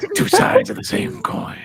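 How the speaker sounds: pitched way up and loud. Repeating a line about Batman and the Joker: Two-Face impression. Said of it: "that's my Two-Face impression".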